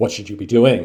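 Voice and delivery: reproachful, judgmental, disapproving tone. Coaching about voice tone, asking a question in a judgmental tone. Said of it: "your voice tone is giving off that judgmental".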